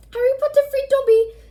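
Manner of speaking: very high, loud, shrill squeaking cry. A narrator reads the freed elf's line to Harry, shrill Dobby voice. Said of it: "said the elf shrilly".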